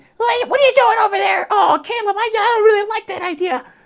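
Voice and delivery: very high pitch, pushed from the back of the throat. Showing how the Nott character sounds: high-pitched back-of-throat Nott voice. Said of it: "high-pitched, straight back of the, the throat type of accent".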